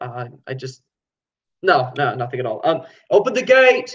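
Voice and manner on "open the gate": shouted over shoulder, much higher pitch. Voicing a guard in a tabletop game, shouting over his shoulder. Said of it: "he kind of shouts over his shoulder".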